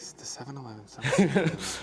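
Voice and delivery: soft mutter under the breath. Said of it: "I hear him muttering it".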